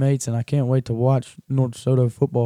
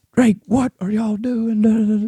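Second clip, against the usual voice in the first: mock yelling, very high-pitched; 9 semitones higher than usual. Retelling a mom calling her son at one in the morning: imitating a mom yelling. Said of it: "Just yelling at him".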